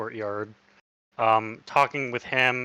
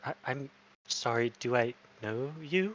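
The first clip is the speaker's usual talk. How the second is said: faint, hushed, quiet half-whisper throughout; 8 dB quieter than usual. Narrating a scene, voicing a man's reply to the listeners, half-whispering. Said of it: "you just hear him whisper".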